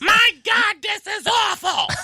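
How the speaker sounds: put-on very high, drawn-out, tipsy drunk old lady voice. Retelling the only response at a silent comedy set: imitating a drunk old lady. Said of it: "one little drunk old lady at the bar that just".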